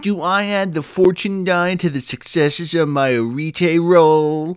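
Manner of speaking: very annoying, high, slow, drawn-out voice. Describing a book's Q&A section, voicing its questions in a remarkably annoying voice. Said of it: "the remarkably annoying voice".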